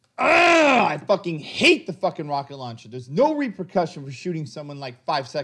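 fuming, furious, angry cursing out loud. Player downed by an enemy's rocket launcher in a game, fucking angry. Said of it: "I'm fucking angry right now".

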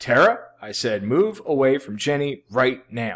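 urgent, pressing, demanding tone. Demonstrating tone of voice toward a student, second time: urgent. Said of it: "Second time, eye contact and urgency. Tone of voice is very important".

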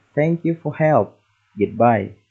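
ordinary talk, nothing marked

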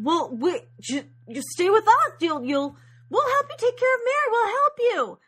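high-pitched, loud, eager, pleading tone.

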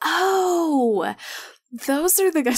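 laughing, with a high drawn-out oh. Suddenly remembering something mid-conversation, speaking while laughing. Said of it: "I'm laughing because".

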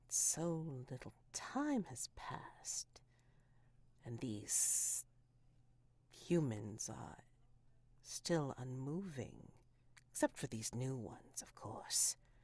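dry, supple, willowy, gossipy chattering voice. Imagining what the trees say, the speaker gives them a dry, gossipy tree voice. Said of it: "I think you start to hear their voices. You start to hear their way of talking, dry and dry, but possibly also flexible and willowy and just gossipy even, ... dry and dry, but possibly also flexible and willowy and just gossipy even".

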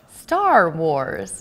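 terrible fake American accent. Pressed by the other speaker to say the title, trying it in a tragic American accent. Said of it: "Applying my tragic American accent to those words".

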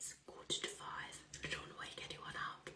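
hushed whisper. Speaking very early in the morning, trying not to wake anyone, whispering. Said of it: "I'm whispering because it is so early".

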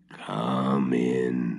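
low, rough, grating witch voice. Marusha knocks at the hut door and Baba Yaga's grating voice answers. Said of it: "answered a grating voice".

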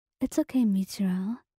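ordinary delivery

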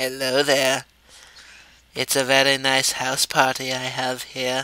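very low, hushed, slow deep voice. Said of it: "He's just like".

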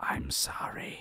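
rasping, creepy, ghostly whispered voice. Retelling a voice suddenly heard in the left ear while working, raspy, creepy voice. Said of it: "in the raspiest sort of, like, creepy voice".

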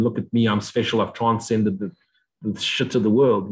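ordinary delivery

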